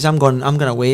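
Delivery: ordinary talk, nothing marked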